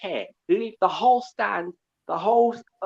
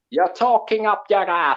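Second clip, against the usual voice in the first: phrase said the Jamaican way; 4 dB louder than usual. Demonstrating how a phrase sounds said in a Jamaican accent. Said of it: "as they say in a Jamaican accent".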